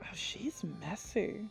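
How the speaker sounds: very quiet whisper. A voice resting on the listener's shoulder speaks into their ear in a very quiet whisper. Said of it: "a very quiet voice whispers into your ear".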